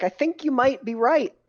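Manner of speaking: mocking, insincere tone. Answering another character in a roleplay, in a sarcastic way. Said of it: "in a sarcastic way, I'm gonna be like".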